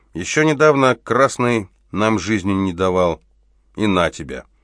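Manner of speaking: ordinary delivery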